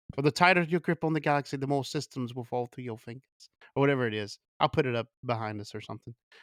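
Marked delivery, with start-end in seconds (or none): 0.2-3.2 put-on British accent. Quoting Leia's line to Tarkin from A New Hope: Leia's fake British accent. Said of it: "she's got the fake British accent".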